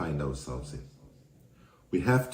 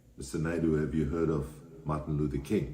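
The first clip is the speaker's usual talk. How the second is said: usual speaking voice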